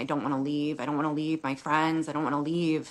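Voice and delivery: mock sobbing voice. Retelling begging a husband not to move away: retelling own sobbing plea. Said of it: "I remember just sobbing and saying".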